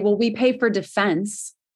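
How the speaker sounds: mock, put-on sarcastic tone. Retelling what lawmakers answer when asked how to pay: imitating a sarcastic remark. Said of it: "They kind of sarcastically say".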